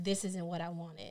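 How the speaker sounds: mock menacing, chilling tone, hushed and very scary. Retelling what the client said after hours of braiding: mimicking a very scary voice. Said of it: "in a very scary voice".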